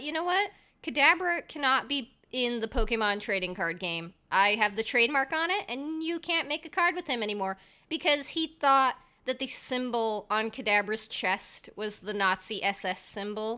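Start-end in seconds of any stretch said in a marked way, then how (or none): none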